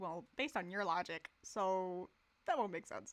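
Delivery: argumentative debating voice, like a rebuttal. Mocking the logic of an old paragraph: Ben Shapiro impression. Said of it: "Did you just do a Ben Shapiro impression?".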